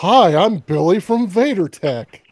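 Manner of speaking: very slow, drawn-out, stretched delivery. Teasing another speaker about his old YouTube intro: mocking imitation of his voice. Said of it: "don't talk like this".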